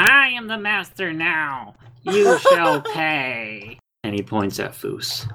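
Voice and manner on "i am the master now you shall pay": very high, swooping, slow villain voice shouting. Voicing the villain Meeker shouting at the party: villain shouting. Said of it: "And Meeker shouts".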